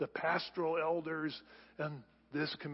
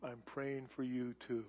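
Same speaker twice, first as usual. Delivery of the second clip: put-on faint near-whisper, lower and quieter; 3 semitones lower, 8 dB quieter than usual. Retelling a dying brother's faint reply: imitating an almost inaudible voice. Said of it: "in an almost inaudible voice".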